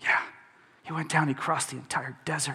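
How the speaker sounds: hushed whisper. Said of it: "And you're whispering".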